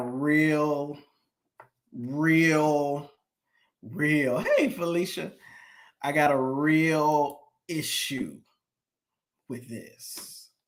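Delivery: speaking slowly. Telling viewers about a bishop marrying an eighteen-year-old, talking slowly. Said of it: "I'm talking slowly".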